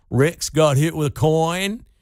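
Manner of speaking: put-on slow, drawn-out, homespun, folksy regional accent. Retelling the coach after a game where a player got hit with a coin, Roy Williams's accent. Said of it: "Roy Williams had this accent, this dialect".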